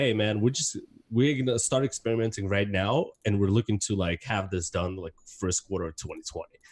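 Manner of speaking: normal talking voice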